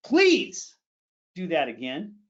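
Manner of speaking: angry voice with swooping pitch. Teaching public speakers about intensity, demonstrating the same phrase: angry. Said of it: "Are you going to be angry?".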